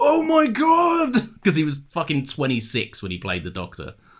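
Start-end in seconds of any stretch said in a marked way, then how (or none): 0.0-1.3 high, slow, loud amazed shout. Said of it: "everyone's like".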